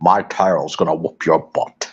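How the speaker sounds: very low, deep movie-star voice. Describing the British version of a game character: Sean Connery voice. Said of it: "imagine Sean Connery sit there and says".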